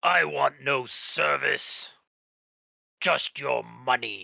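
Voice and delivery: dark, deep, low creature voice. The beast answers the one who told it to be gone, in a deep, booming voice. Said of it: "chuckles in this deep, booming voice".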